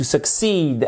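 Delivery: succeed with stress on second syllable -ceed. Teaching English words in a French lesson: succeed stressed on second syllable. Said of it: "accent tonique sur la, deux, sur la seconde syllabe".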